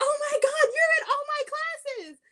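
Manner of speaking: acted-out, shrill, very high-pitched screech. Telling of a classmate getting on the bus, imitating a classmate's scream. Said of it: "she screams".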